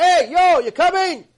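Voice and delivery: booming, high, loud market holler. Explaining how not to answer someone who calls, imitating a loud market call. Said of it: "like he may be in a shuk".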